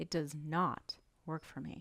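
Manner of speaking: not stressed the hardest. Lesson on stressing negative words: stress on not. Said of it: "Notice how I stress the negative word doesn't and not".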